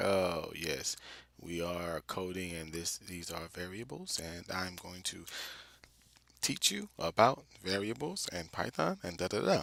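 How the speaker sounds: dull, low, soft, sleep-inducing droning lecture voice. Warning viewers about a coding video's narrator, imitating his monotone voice. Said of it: "this guy's voice is a bit monotone, meaning he sounds like the red eye guy where he talks like".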